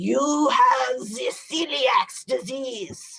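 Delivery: put-on heavy, thick German accent. Quoting a doctor calling with test results, in a thick German accent. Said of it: "in his thick German accent".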